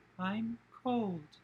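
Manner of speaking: put-on eerie ghost-child voice, very high and creepy. Describing a little boy's ghost repeating a line, very high-pitched ghost voice. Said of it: "but in a very high pitch".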